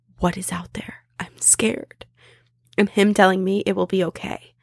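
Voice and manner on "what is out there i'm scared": hushed whisper, much quieter. Retelling what they whispered to a companion inside a truck: retelling a whisper. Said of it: "We whispered to each other".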